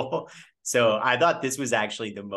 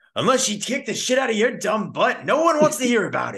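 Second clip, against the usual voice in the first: very high, loud, hard yell; 12 semitones higher, 5 dB louder than usual. Imagining the actor cast as the English teacher, address Joey Donner, imitating Pacino yelling. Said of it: "I could see Pacino just yelling at".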